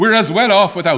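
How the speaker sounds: put-on speaking in a Ballybricken accent. Retelling a heckler shouting up at John Redmond, in an imperfect Ballybricken accent. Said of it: "I can't imitate the Ballybricken accent perfectly".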